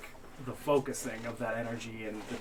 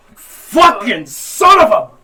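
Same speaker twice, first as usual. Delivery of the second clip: pained, very high, very loud, slow delivery; 11 semitones higher, 25 dB louder than usual. Voicing a character whose neck bolt is ripped out: cursing in pain. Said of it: "She's like".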